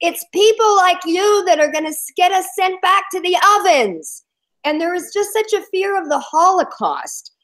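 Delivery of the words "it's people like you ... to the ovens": high, shrill screaming. Retelling what a lady at a protest screamed: imitating someone screaming. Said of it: "she was screaming at me and saying".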